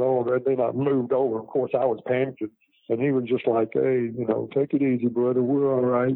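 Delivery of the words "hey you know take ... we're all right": calm, unbothered, laid-back, easygoing way of talking. Retelling what the passenger said while cards were played: imitating Jimmy's way of talking. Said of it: "that's the way he was".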